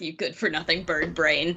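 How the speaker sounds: low, quiet mutter under the breath, to oneself. A player's character heads down the stairs and mutters at someone, muttered under the breath. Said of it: "mutter under my breath".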